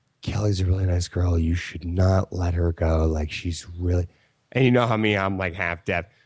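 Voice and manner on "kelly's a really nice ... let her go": whispered, much lower pitch. Retelling what a drunk woman whispered a foot from his face, retelling a whisper. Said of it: "she's like whispering to me".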